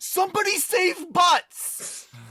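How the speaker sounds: very high cry, close to tears. Recounting a game battle where a character went down: imitating a tearful scream. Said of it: "screamed with like almost tears in their eyes".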